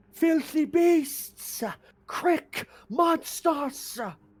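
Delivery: very high-pitched, drawn-out outburst. Voicing a captive character cursing his captors: screaming profanities in character. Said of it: "he's just screaming profanities".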